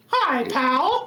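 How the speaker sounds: high-pitched cartoon mouse voice. Podcaster who does voice impressions greeting everyone, Mickey Mouse voice. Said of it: "I can do Mickey".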